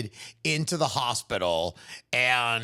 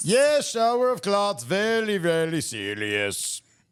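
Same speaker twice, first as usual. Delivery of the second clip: put-on heavy Eastern European accent. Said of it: "thick Eastern European accent".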